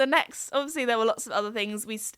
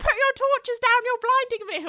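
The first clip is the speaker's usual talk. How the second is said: shrill, very high-pitched shouting; 12 semitones higher, 4 dB louder than usual. Retelling an old man in a field shouting at the group: imitating a man shouting.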